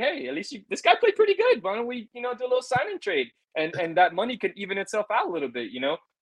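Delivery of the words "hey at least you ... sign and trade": high, pitched-up mock sales pitch voice. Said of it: "Be like".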